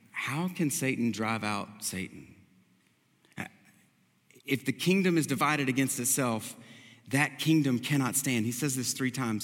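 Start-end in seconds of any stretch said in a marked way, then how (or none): none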